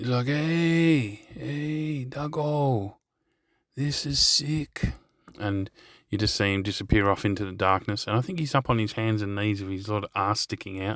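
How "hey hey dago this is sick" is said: put-on thick Greek accent, high pitch, very slow pace. Retelling Cobra calling back from inside the tunnel, imitating his strong Greek accent. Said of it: "with this strong Greek accent".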